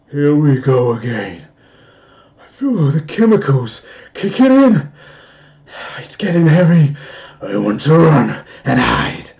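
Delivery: frightened yet sinister, very loud. Speaker redoes a line after a bad first take, in a half scared, half evil voice. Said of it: "in a half scared, half evil voice".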